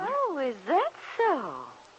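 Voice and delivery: slightly taken aback, high. [name], just told Nicholas is thinking of staying in Wakefield, responds surprised. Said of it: "You sound surprised".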